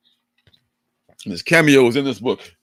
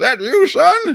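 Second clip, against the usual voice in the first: put-on high, loud old man voice. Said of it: "totally acting like the old man now".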